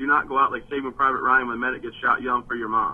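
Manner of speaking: ordinary delivery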